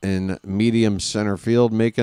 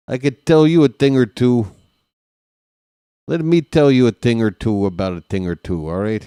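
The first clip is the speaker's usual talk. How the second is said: put-on Chicago accent, laid on; 4 dB louder than usual. Calling a baseball game pitch by pitch, in a Chicago accent. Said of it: "my Chicago accent needs work".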